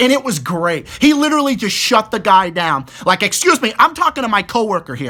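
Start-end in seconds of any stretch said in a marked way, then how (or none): 3.2-5.1 curt, snapping, dismissive tone. Retelling how a coworker snapped at an interrupting guy: imitating a coworker snapping. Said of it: "he snaps at the guy".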